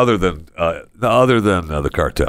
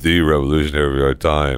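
put-on voice, much lower and deeper; 4 semitones lower than usual. Friends recreating a video, one mimics the person's line: imitating a deeper voice. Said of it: "You got to deepen your voice".

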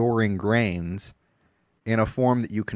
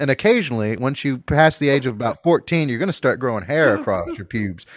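normal talking voice

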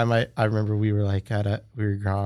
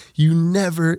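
scream, higher and louder; 8 semitones higher, 5 dB louder than usual. Retelling how a surfer yelled at them as a kid: imitating someone screaming. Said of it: "he's screaming at me".

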